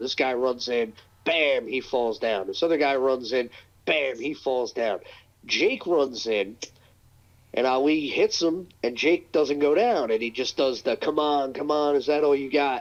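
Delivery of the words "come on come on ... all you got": put-on mocking, taunting tone. Retelling a wrestler taunting after a punch: imitating a mocking taunt. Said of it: "he starts mocking him".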